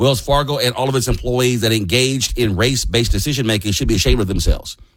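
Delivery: ordinary delivery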